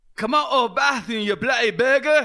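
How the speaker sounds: put-on South African accent. Retelling what a man said at a locked bathroom door, imitating a South African accent. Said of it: "because he's from South Africa".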